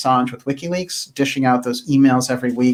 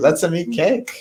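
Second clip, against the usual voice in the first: put-on German accent, pitched up; 5 semitones higher than usual. Given the last word at the end of a broadcast, German accent. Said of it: "that's a German accent".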